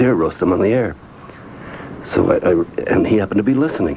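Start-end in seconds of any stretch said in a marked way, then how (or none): none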